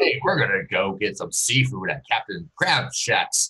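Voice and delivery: announcer-style delivery. Imagining someone who naturally talks like an announcer: announcer voice. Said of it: "Like the announcer voice?".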